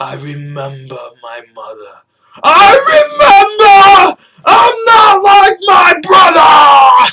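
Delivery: put-on very high, swooping, rising, all-out scream. Retelling a movie scene where the actor screams out of nowhere: imitating Eddie Redmayne screaming. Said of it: "he goes".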